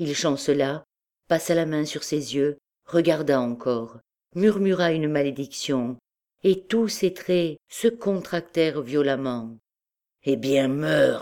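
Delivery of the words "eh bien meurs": spoken through gritted, clenched teeth. The captain, after muttering a curse, speaks through gritted teeth. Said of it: "dit-il entre ses dents".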